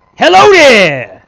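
all-out very loud, high yell. Answering a phone prompt that asks for a yell: loudest yell possible. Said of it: "give us your loudest yell possible".

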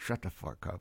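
talking out of mouth's side. Retelling what a kid in a Safeway shopping cart said, talking out of side of mouth. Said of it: "he's talking out of the side of his mouth".

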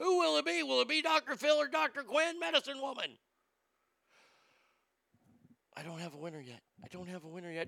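rapid-fire, hushed, very quiet delivery. Waiting for a vote to break a tie: talking as fast as possible. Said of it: "I'm talking as fast as I possibly can".

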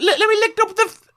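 high, loud mock old English accent. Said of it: "you have to read in the accent".

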